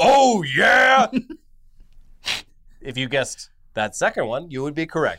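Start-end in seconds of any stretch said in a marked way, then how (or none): 0.0-1.1 loud, high mascot yell. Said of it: "while screaming".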